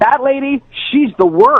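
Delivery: really loud, high-pitched, declarative voice. Retelling what she said next after laughing at the speaker, really loud voice. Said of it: "in a really loud voice".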